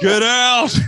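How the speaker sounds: put-on furious wrestler shout. Retelling how Andre answered the nervous question, imitating Andre yelling. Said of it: "You just hear him yelling at you".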